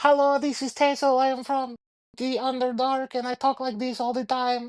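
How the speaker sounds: put-on very high-pitched voice with Eastern European accent. Player voicing a three-foot gnome character on a server, high-pitched Tessel gnome voice. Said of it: "generic Eastern European accent ... gonna have like a high pitched voice".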